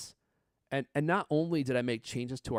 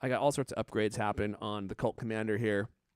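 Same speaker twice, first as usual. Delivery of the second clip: usual speaking voice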